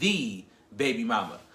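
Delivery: "the" stretched and stressed, long double E. Dramatically calling her the baby mama: drawn-out stressed 'the'. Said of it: "when I say the, I put an emphasis on the two E's".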